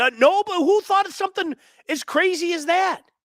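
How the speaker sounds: mock triumphant, very high, loud gloating outburst.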